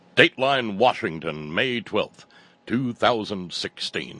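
loud, powerful newscaster voice. Podcast host reads a news dateline aloud in a stentorian newscaster voice. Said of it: "we'll need some stentorian".

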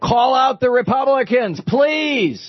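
high, slow pleading yell.

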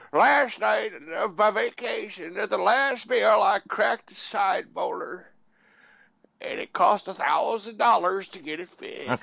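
put-on high, cranky, complaining old man voice. Asked by the other speaker to do it, the speaker uses a cranky old guy voice. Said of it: "You need to use your cranky old guy voice".

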